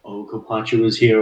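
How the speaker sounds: ordinary talk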